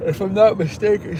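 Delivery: very high-pitched words drawn out by a yawn. Speaking about someone's grade result, talking through a yawn. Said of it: "sorry, I'm yawning".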